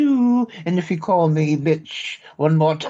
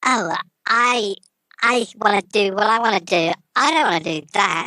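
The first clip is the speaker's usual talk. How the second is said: put-on sassy, disagreeable bratty kid voice, higher pitch; 4 semitones higher than usual. Trying out a character on request: sassy impertinent little kid. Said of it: "talk like you're an impertinent little kid".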